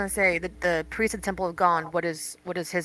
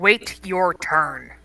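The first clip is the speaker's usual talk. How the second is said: loud, stern, scolding mom voice; 5 dB louder than usual. Voicing a character telling guards to wait their turn: stern mother voice. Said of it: "use her mother voice".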